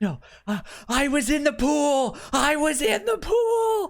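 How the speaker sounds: mock horrified tone, very high-pitched and rising. Retelling a scene where a man looks down and protests, imitating a horrified protest. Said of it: "he gets horrified and he's just like".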